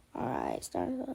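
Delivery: very quiet, breathy, whispered voice cracking nervously. Retelling an embarrassing moment of starting up, imitating own nervous voice crack. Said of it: "So this would have sounded like".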